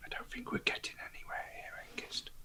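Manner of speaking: hushed, very quiet, close whisper. Game narrator voices Gulliver leaning in close to Hengist, Gulliver's whisper. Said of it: "he'll say in a whisper".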